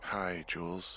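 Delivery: drowsy, tired, sleepy just-woken voice. Picking up the radio from bed to greet Jules, in a tired voice. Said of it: "you sound tired".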